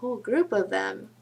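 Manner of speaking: wry, knowing, sarcastic tone. Quoting an author's sarcastic line from a book: imitating a sarcastic remark. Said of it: "sarcastically he said".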